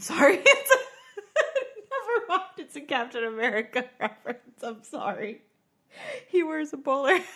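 talking through giggles. Explaining a Captain America reference after a confused reply, laughing while talking. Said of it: "I don't know why I'm laughing".

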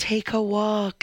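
spooky, eerie, otherworldly ghost voice. Describing a favourite movie scene, the speaker quotes it: ghost voice. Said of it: "there's that ghost voice of".

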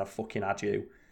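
put-on muttering. Retelling what a man muttered under his breath, acting out a mutter. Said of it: "muttering his breath".

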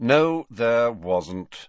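bored, uninterested, offhand, dismissive tone. Answering a student's question, the teacher replies in a bored voice. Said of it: "said Snape in a bored voice".

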